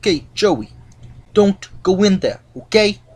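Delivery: bad, terrible put-on Italian accent. Speaker retelling what a guy says about his locker: terrible Italian accent. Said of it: "That's my terrible Italian accent".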